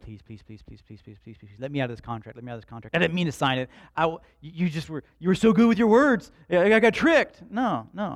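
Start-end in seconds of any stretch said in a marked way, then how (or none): 0.0-7.4 very loud pleading, begging over and over. Acting out someone begging to be let out of a contract: mock pleading. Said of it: "He's not walking through life going like".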